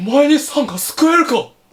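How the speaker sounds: loud wolf goddess voice. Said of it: "モロのモノマネ".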